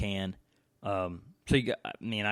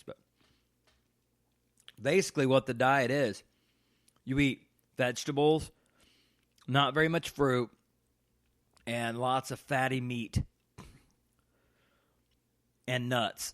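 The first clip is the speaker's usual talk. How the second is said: talking with mouth full, chewing, higher pitch; 4 semitones higher than usual. Podcast host explaining the diet while eating a casserole, chewing while talking. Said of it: "Sorry for chewing on the podcast".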